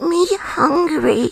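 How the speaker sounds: cute high toy voice. Doing a voice for the hosts after they ask: Labubu voice. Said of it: "it's my Labubu voice".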